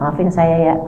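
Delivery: soft, low, sheepish and reluctant. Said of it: "saya akan bilang sama dia gitu".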